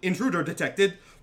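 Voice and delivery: high-pitched, automated, mechanical alarm announcer voice. Voicing an alarm heard in a street: very loud alarm announcement. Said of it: "you hear very loudly".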